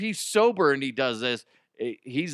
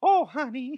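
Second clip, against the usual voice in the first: very high squeaky cartoonish voice; 13 semitones higher than usual. Acting out a mother answering her child's question: Mickey Mouse-like voice. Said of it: "That sounds like Mickey Mouse".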